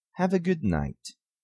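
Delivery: pitch falls and settles down on night. English lesson on statement intonation, falling pitch on night. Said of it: "Na falling intonation, nós baixamos a voz no final da frase".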